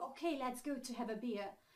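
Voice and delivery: ordinary talk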